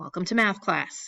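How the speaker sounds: raspy, hoarse voice. Reading a story aloud, the math teacher greets the class: raspy voice. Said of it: "the woman says in a raspy voice".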